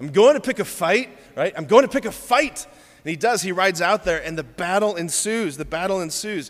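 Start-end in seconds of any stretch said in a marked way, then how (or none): 0.0-2.7 put-on pretty good Scottish accent, pitched up and loud. Retelling William answering his friend Hamish, William's Scottish accent. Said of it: "It's a pretty good Scottish accent".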